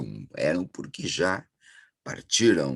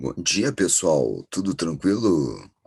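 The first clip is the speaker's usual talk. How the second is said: radio-announcer voice, hoarse from a sore throat. Greeting viewers while having a sore throat, in a radio-announcer voice. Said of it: "essa voz de locutor de rádio".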